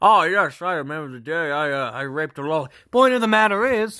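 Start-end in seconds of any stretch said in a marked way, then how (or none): 0.0-2.7 showy, put-on fancy voice. Joking about changing voices, then switching into a put-on fancy voice. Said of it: "'cause it's not my fancy voice".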